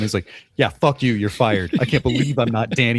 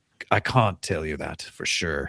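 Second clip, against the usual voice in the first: put-on slow, drawling American accent with a slight British hint; 7 semitones lower, 6 dB quieter than usual. Guessing how a movie character talks: fantasy accent, american with british touch. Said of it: "with a touch of British on the dusting".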